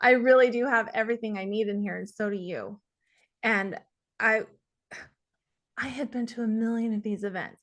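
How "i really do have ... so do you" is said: voice catching, choked-up, on the edge of tears. Sharing her own story, on the verge of crying. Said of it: "excuse me, I'm going to cry".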